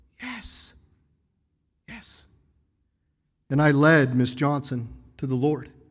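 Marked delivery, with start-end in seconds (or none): 0.2-2.3 faint, barely audible whisper. Retelling how a woman answered when asked to accept Jesus, faint quiet voice. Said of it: "with a faint, quiet voice".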